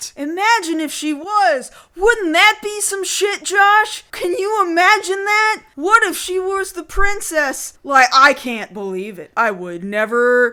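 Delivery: loud, heavy, laid-on-thick sarcastic gushing. Joking with another speaker about a character being a princess: heavy mock sarcasm. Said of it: "we're using sarcasm real hard right now".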